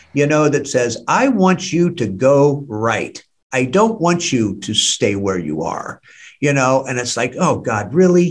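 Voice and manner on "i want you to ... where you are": gentle, hushed, soft, quiet and slow little voice. Recalling a voice heard in the night years after getting clean, soft, quiet voice. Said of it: "here comes that little soft, quiet voice".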